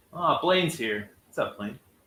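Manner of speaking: deflated, disappointed, let-down tone. Streamer greets an arriving viewer by name; disappointed-sounding. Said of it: "Why did you sound disappointed?".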